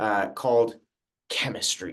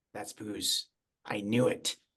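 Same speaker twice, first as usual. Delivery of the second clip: muttering in a whisper under breath, quieter; 6 dB quieter than usual. Playing a character who notices booze in the teachers' cups: whispering under breath. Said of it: "I whisper under my breath".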